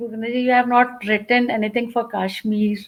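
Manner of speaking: ordinary talk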